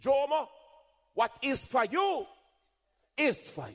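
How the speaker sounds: put-on high-pitched Jamaican accent. Quoting what the speaker's mother would say, in a Jamaican accent. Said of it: "as my mother would say in her Jamaican accent".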